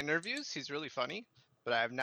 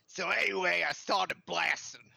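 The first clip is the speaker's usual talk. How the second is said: put-on gruff comic voice, higher and louder; 4 semitones higher, 4 dB louder than usual. Doing an impression after the others ask for one: Danny DeVito impression. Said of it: "then do a Danny DeVito".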